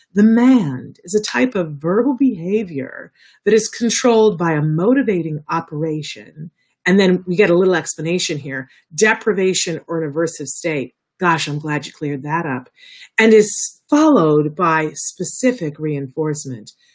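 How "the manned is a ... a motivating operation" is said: automated elevator announcer delivery. Speaker reading a jargon definition aloud in an elevator voice. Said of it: "I have to use my elevator voice".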